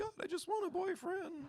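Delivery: put-on very high young-teen voice. Speaker acting out junior-high prayers, then apologizing for the voice: imitating own junior-high voice. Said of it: "that was my voice in junior high".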